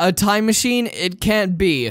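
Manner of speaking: plain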